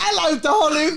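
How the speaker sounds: put-on British accent. Imitating own nervous greeting on walking in: put-on british accent. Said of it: "speaking in the British accent".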